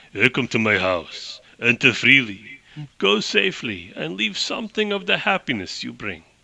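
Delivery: put-on heavy Russian accent, laid on thick. Retelling how a character greets Lee at his house, in a thick Russian accent. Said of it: "he's got like a thick Russian accent".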